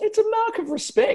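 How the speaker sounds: squeaky voice shooting up very high. An Arsenal fan explains wearing a Leeds United shirt, voice going up high. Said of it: "Why did your voice go up like a".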